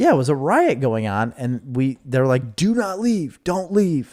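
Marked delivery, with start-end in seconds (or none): 2.5-4.1 high, screamed delivery. Retelling a riot where people warned them to stay: imitating people screaming. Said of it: "They were screaming at us".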